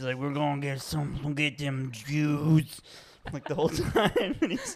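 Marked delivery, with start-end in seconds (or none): 0.2-2.8 put-on drunken slurring, much slower. Describing a drunk movie character, the speaker quotes him, imitating drunken slurring. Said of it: "but he slurs them".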